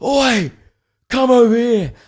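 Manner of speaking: very high, drawn-out, menacing, threatening voice. Retelling how a man waved the speaker over: imitating a threatening call.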